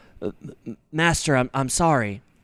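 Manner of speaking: put-on timid robot voice. Quoting a robot apologizing to his master, in Pato's cowering, slinking-away voice. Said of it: "He's got this demeanor where he's like slinking away".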